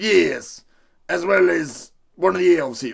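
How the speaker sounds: heavy, strong put-on country accent. A character answers a surprised question about who is there, country accent. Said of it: "You became very country".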